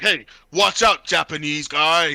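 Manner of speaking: slow, cheesy, corny dubbed-movie style voice. Retelling a movie bar scene, quoting an American guy in a corny dubbed-movie voice. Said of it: "and his dub just like that, all corny".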